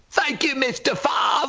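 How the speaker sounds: put-on Cockney accent, very high-pitched. Acting out a child asking for an autograph: put-on cockney accent. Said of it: "they all did approach with a Cockney accent".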